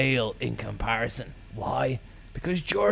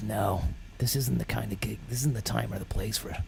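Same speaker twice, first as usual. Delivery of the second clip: ordinary delivery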